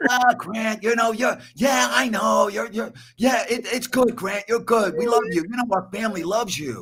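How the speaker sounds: very high, stammering, halting, soothing placating voice. The listener joins in right after praising the impression, doing a Joe Maloof impression. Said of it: "the mannerisms".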